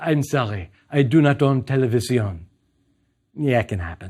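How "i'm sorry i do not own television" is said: put-on lovely French accent. Retelling what a woman buying a drink replied to his question, in a French accent. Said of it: "In a beautiful French accent".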